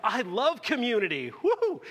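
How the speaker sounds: mock very high, swooping, gushing excited extrovert cheer. Addressing introverts, the speaker imitates an extrovert with an impression of an excited extrovert. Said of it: "that's my impression of extroverts".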